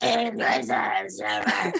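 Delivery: sick-sounding voice calling out.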